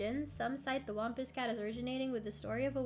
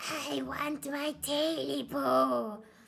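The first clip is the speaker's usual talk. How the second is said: high, hoarse creature croak, dragged very slow; 3 semitones higher, 5 dB louder than usual. Narrating a story, the thing in the darkness speaks: high, hoarse voice. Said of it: "A high, hoarse voice croaked from the darkness".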